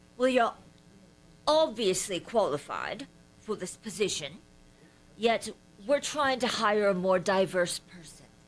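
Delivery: daft, silly put-on British accent. Speaker retells a senior vice president ending an interview, in a put-on british accent. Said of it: "tells him in his stupid British accent".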